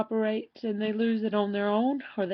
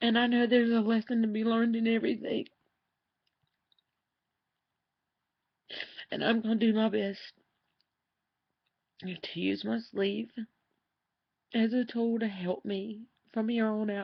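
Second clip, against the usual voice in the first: speaking through tears. Sharing a personal video before sleeve surgery, crying. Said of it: "I really can't believe I'm crying this much".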